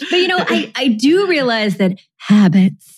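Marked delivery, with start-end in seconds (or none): 2.2-3.0 deliberately deepened voice. Vowing to deepen voice for the episode, speaker says the running word in a deliberately deepened voice. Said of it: "I'm gonna work on deepening my voice".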